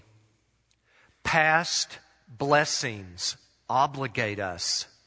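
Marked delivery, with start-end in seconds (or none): 1.2-4.9 very slow, drawn-out delivery. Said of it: "let me say it slowly".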